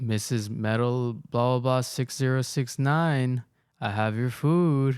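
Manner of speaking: unsettling, creepy, strange-sounding delivery. Retelling how a delivery man announced himself at the door: imitating a creepy voice. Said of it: "says it all creepy like that".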